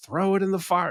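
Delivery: mock screaming, high-pitched and screamed. Retelling a movie scene where one character urges another: imitating someone screaming. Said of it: "the other guy is just screaming at him".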